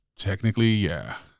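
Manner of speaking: mock-disdainful tone. Acting out what they say about a student moving on, mimicking a disdainful tone. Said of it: "they say it with disdain".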